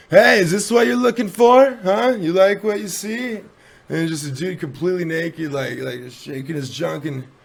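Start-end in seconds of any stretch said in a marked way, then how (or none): 0.1-3.4 brash, loud, high jeering yell. Retelling a man yelling up from the building's courtyard: retelling a man yelling. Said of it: "Just some dude yelling".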